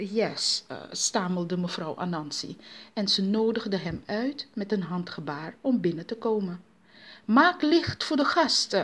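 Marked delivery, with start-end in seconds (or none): 7.2-8.8 flustered, anxious, high-pitched yell. A mother welcoming a strange visitor turns to her children: shouting nervously. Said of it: "schreeuwde zij zenuwachtig tegen haar kinderen".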